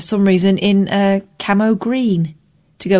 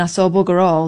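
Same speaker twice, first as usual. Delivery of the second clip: ordinary delivery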